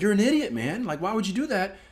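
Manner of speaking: high-pitched mock yell.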